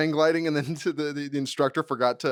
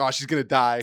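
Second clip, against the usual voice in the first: mock anxious, fearing-the-worst worried tone; 3 semitones lower than usual. Retelling one onlooker's reaction as she went ahead, imitating his worried tone. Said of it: "he's speaking in a tone that's like".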